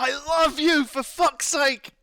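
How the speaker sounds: put-on very high, loud, drawn-out yelled scream. Retelling yelling into a game's microphone with a house full of people: imitating own past screaming. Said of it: "so I'm just screaming".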